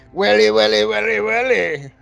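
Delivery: put-on old-school London Cockney accent. Imitating how a man talks, in an old Cockney accent. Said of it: "that old like Cockney kind of accent".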